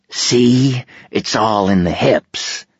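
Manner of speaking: very slow grunt, forced through clenched teeth. Narrator voicing a lieutenant teaching someone to swing a bat, grunted through clenched teeth. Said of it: "he grunted through clenched teeth".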